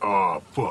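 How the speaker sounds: textbook porn voiceover delivery, super low tone. [name] answers Katie about his naturally low voice: super low porno-style tone. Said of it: "that was a textbook. Oh, fuck".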